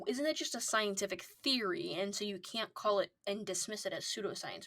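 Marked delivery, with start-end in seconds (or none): none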